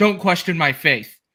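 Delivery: acted stern, firm voice. Retelling a reply to someone who questioned him: imitating a very stern tone. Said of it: "in a very stern tone".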